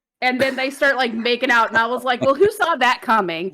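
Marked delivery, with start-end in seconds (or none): none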